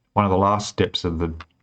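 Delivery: plain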